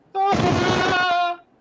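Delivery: loud yell. Voicing a character crying out in a magical message: loud yell. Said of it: "'cause it's loud".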